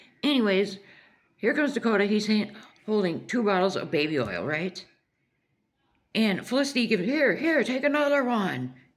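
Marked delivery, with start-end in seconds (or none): 7.0-8.7 put-on loud hollering, high and pitched up. Retelling Felicity handing over bottles in a store: imitating someone yelling. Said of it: "yelling in Dollar Tree".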